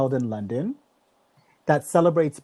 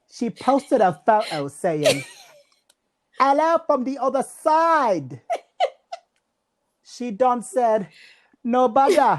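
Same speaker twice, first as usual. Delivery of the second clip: high-pitched mock British-Jamaican accent. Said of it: "I gotta get British, British slash Jamaican here".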